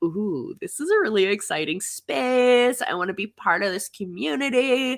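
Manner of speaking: put-on Valley Girl accent, "space" drawn out. Retelling what first year students said at the collective: imitating students in Valley Girl accent. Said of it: "everyone has a Valley Girl accent in my world".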